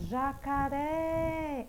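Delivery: jacaré with the final syllable ré drawn out long. Teacher says jacaré to show its stressed syllable, holding ré longer. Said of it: "olha onde é que eu demoro mais".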